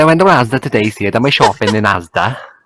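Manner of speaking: strongest, heaviest Welsh accent. A Welsh speaker, asked to put on their strongest accent, strongest Welsh accent. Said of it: "Put on your strongest Welsh accent".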